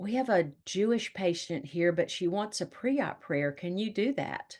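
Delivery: hushed, half-whispered stage whisper under the breath. The speaker recounts a nurse's phone request for a pre-op prayer, imitating a half-whisper. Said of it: "in this kinda whispered voice saying".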